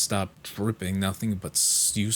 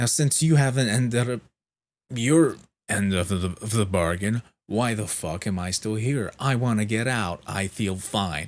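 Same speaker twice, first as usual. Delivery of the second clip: mock heated, fuming, furious, angry rant; 4 dB louder than usual. Retelling arguing with the head nurse to be discharged, retelling an angry rant. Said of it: "I explained the situation really angrily".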